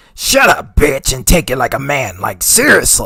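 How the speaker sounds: loud, swooping put-on voice. Asked to repeat a quoted line in the man's voice, imitating his voice. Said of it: "Just do it in his voice if you can".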